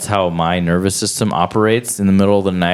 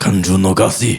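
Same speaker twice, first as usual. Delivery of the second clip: put-on wise old grandpa voice. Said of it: "Grandpa, is that you?".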